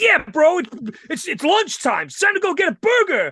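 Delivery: dude-bro talk. Retelling what a man leaving a building said about lunch, imitating a bro. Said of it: "a kind of bit bro".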